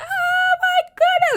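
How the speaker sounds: put-on very high, thrilled, excited little-girl shriek. Retelling a little girl's reaction when she arrived at a party, imitating a girl screaming excitedly. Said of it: "she's like screaming".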